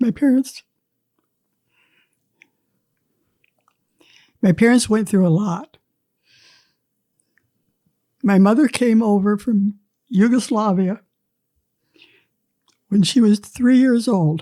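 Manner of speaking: emotional, tearful, close to tears. Asked about their parents, the speaker begins to answer, emotional, close to tears. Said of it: "first first tears you'll see".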